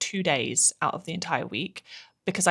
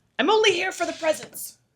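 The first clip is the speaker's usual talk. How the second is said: very high-pitched put-on character voice; 14 semitones higher, 3 dB louder than usual. Reading a line aloud from a Grinch advent calendar: Grinch impression. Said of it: "That was a really good impression".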